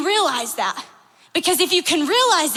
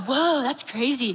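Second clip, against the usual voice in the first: mock amazement, lower and quieter; 4 semitones lower, 5 dB quieter than usual. Retelling how the friends react to the saying: imitating friends amazed. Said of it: "we all go".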